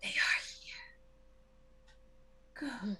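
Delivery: grating, rasping, machine-like whisper. Voicing the oracle as its wooden mouth opens, in a rasping mechanical whisper. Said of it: "in a rasping, mechanical voice, it whispers".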